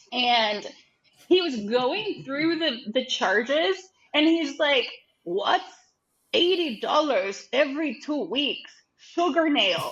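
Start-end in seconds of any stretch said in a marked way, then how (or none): 5.2-9.9 heavy put-on German accent, laid on thick. Retelling a mentor questioning a charge on a bank statement: imitating a thick German accent. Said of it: "He's got a really thick German accent".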